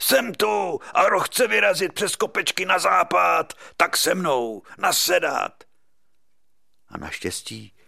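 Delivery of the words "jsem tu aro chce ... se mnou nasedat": put-on raspy, hoarse roar, pitched much higher. Acting out a man who burst into a hall during a party meeting, imitating his raspy roar. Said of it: "tím chraplavým hlasem".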